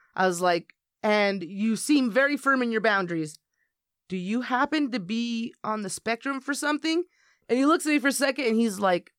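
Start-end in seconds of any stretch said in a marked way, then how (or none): none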